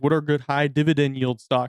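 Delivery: plain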